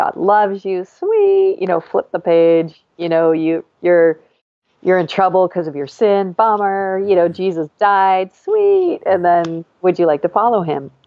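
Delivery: put-on reluctant, sarcastic, swooping sing-song. Retelling own reluctant gospel presentation to a girl: imitating own sarcastic tone. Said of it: "sarcastic, and I didn't wanna do it".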